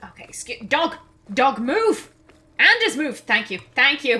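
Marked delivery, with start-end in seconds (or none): 0.7-3.2 shouting, higher and louder. Playing a game, telling the dog Anders to move: yelling at a dog. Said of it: "Sorry for yelling".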